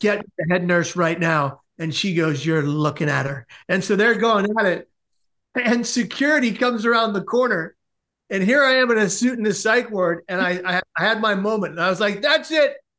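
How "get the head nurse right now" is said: ordinary talk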